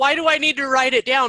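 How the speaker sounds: ordinary talk, nothing marked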